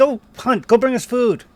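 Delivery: very loud, high shouted voice. Voicing kobolds behind a door giving an order: kobolds shouting. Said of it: "shouted at the door".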